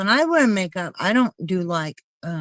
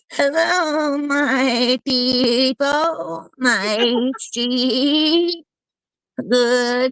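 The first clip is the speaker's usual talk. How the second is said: very slow, high sheep voice, stretched "my"; 6 semitones higher than usual. Greeting the people while trying to talk like a sheep, sheep voice. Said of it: "I'm trying to talk like a sheep".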